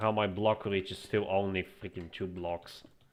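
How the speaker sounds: ordinary delivery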